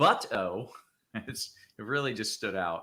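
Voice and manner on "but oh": heavy, hard stress on "but". Echoing the way someone emphasized a word: heavy stress on 'but'. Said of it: "the way you emphasized the but".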